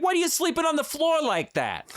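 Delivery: very high, sing-song, swooping, nagging, scolding mother voice. Discussing a story character's sleeping habits: imitating a scolding italian mother. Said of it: "I can imagine some Italian mother being like".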